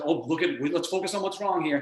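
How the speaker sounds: normal talking voice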